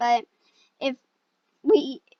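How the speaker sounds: voice breaks mid-word on "we". Talking to viewers of a small channel, voice cracking mid-sentence. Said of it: "my voice cracked".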